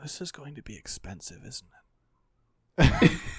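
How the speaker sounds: dull, droning character voice. Voicing Dietrich as the runner flees: Dietrich's dull voice. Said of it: "the dull voice of Dietrich going".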